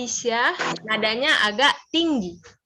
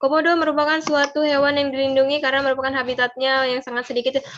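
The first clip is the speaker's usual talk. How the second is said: read straight through without any pauses. Lesson on punctuation and pauses, a sentence read aloud with no pauses. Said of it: "nggak ada jedanya".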